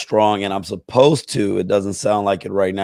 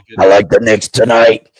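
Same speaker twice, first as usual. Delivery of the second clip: louder put-on chainsaw-like feral voice; 8 dB louder than usual. Imitating the guy whose voice sounds like a feral chainsaw. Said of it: "who did that? Is that you, [name]?".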